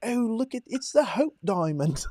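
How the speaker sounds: very high, put-on English accent. Retelling a day spent sightseeing while talking in a put-on British accent. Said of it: "talk in a British accent everywhere that we go".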